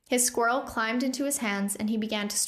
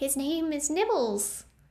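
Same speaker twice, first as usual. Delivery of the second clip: squeaky, higher pitch; 5 semitones higher than usual. A goblin answers a fellow prisoner's remark about his squirrel, squeaky. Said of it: "Hiccup squeaked".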